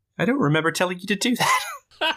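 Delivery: incredulous, disbelieving, high swooping tone. Retelling a movie scene, quoting a character: imitating an incredulous tone. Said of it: "in an incredulous tone".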